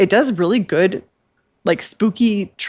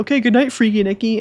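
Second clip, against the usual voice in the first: mock cringy delivery, higher pitch; 4 semitones higher than usual. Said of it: "he's so cringy when he was like".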